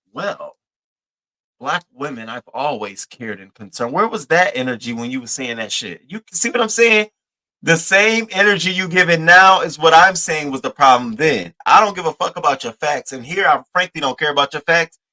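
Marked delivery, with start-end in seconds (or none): 0.1-3.9 acted coy, prim, buttoned-up office-worker voice. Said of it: "you sound coy, like you sit at a desk".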